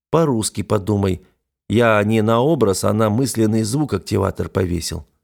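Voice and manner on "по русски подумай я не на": plain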